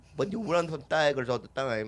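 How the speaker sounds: clumsy, unconvincing put-on Nigerian accent. Imitating a player talking about his calf muscles: attempted nigerian accent. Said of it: "I don't know how to do a Nigerian accent".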